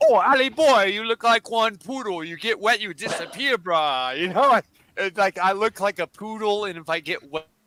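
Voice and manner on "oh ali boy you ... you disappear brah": put-on Hawaiian pidgin, island local accent. The speaker tries an accent they admit they are not good at: Hawaiian accent. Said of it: "a Hawaiian kind uh, accent".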